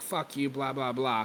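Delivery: ordinary delivery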